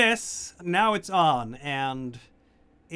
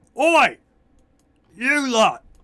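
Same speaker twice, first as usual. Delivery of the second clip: very loud, high-pitched orc shout; 8 semitones higher, 8 dB louder than usual. Voicing an orc calling out to the other orcs, shouting very loudly. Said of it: "he's shouting very loudly".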